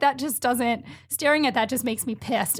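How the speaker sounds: ordinary talk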